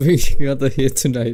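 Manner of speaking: giggling through words. Reading a line aloud, trying to calm down: laughing while talking. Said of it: "Sorry, I need to calm down".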